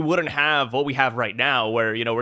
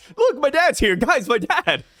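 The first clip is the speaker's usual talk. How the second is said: mock scream, higher; 12 semitones higher, 4 dB louder than usual. Retelling a chapter where a character calls out about his dad: imitating a character screaming. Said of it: "he screams it out three separate times".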